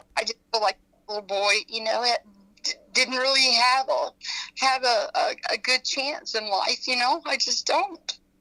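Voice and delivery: emotional voice, stumbling and halting. Explaining feelings about a missing little boy: getting emotional. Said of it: "I can't help to get emotional about it".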